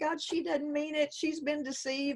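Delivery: put-on sobbing, pleading voice. Retelling praying on a bathroom floor as a child: retelling own sobbing prayer. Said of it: "literally sobbing, crying, saying".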